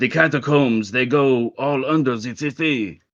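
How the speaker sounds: best-effort put-on French accent. Voicing terrified townsfolk who still try to help, best French accent. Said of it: "That's my best French accent too".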